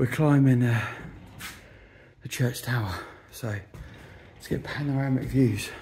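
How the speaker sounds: breathless, winded, short of wind. Climbing the church tower stairs, talking to the audience, out of breath. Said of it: "Out of breath again".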